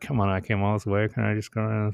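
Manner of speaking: soft, grumpy grumbling dog voice. Describing the dog resisting being turned around at night, imitating grumpy Brody. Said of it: "He's a little grumpy".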